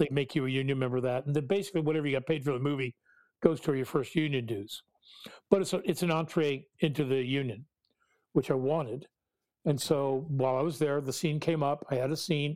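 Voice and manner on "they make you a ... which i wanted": plain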